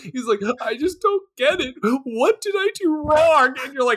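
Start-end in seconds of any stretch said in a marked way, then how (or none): 0.6-3.6 fake crying through the words, pitched up. Acting out a guest crying over grilled food: mock crying. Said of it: "some guy starts crying".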